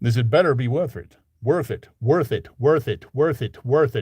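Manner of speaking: put-on American accent, repeated over and over. Practicing a character's line from a story: american accent. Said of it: "The American accent".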